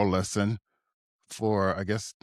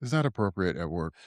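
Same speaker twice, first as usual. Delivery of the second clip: usual speaking voice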